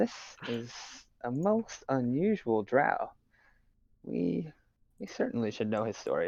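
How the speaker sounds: slow, hushed, confiding half-whisper. Speaking in character to a companion about an unusual drow: half-whispering. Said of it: "whispering this to Phoenix".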